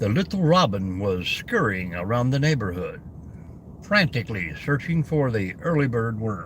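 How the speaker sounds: very deep storytelling reading voice. Imitating a man who reads children's stories, in a very deep storyteller voice. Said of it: "I'll be like that guy with the real deep voice who just uh, reads the children's stories".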